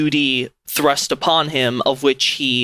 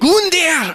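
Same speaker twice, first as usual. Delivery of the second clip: put-on German-accented woman's voice; 3 dB louder than usual. Saying a boss's name as a large Germanic woman would: large Germanic woman voice. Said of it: "like a large, like, I don't know, Germanic woman".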